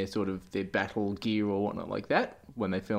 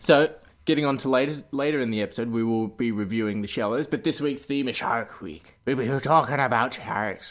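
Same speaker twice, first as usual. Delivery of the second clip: talking like a pirate; 2 semitones higher, 4 dB louder than usual. Host introducing the episode's theme, in a pirate voice. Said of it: "I don't know why I'm talking like a pirate".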